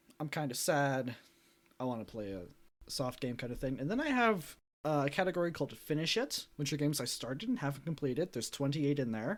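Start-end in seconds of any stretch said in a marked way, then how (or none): none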